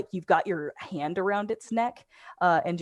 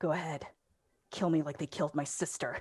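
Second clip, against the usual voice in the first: soft, hushed hiss, words spat out; 2 semitones lower, 8 dB quieter than usual. Game master voicing a woman confronting a player's character, hissing. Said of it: "and she hisses".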